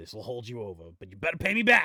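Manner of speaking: grave, serious man's voice, swooping. Voicing the monkey Button refusing a debtor: serious dude's voice. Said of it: "as his voice rapidly changes".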